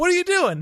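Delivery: acted loud shouting. Retelling a background actor repeatedly asking a question: imitating someone loudly repeating. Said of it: "who's just loudly and continuously going".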